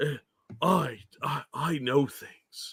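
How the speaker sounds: very slow, serious, dark, mysterious-man half whisper. Mocking someone trying to sound mysterious: imitating a dark, serious mystery half whisper. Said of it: "the dark, serious Mister Mystery voice".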